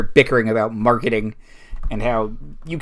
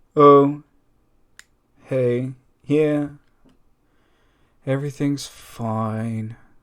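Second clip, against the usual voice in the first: dejected, downcast voice with forced reassurance. Voicing a character answering a concerned question: dejected. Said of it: "looking very dejectedly at the ground".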